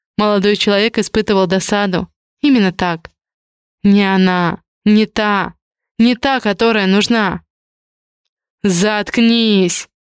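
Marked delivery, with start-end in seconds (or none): 8.6-9.9 sharp, snapping, barked delivery. A young man turns on his father, who keeps shouting at him; barked. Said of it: "рявкнул Павлик отцу".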